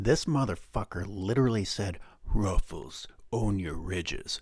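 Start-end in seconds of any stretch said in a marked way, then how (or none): 2.2-4.4 mock-serious, put-on serious voice. Mocking what a man literally said after a game, in a mock-serious voice. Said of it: "in a serious voice".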